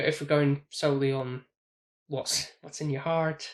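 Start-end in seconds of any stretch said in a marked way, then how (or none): 2.6-3.5 Irish lilt creeping in. Answering a cohost about a film score, Irish-sounding accent. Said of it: "Why did you sound Irish?".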